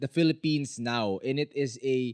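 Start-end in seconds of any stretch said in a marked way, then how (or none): none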